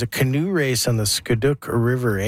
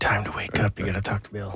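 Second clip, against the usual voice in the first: soft, hushed, close-up whisper; 3 semitones lower, 5 dB quieter than usual. Retelling how Louie whispered a wake-up call in the ear: imitating a whisper. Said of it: "whispering in my ear".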